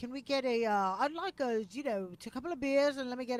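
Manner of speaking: put-on English accent. Retelling how customers ordered beers: imitating an English accent. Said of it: "if I heard an English accent".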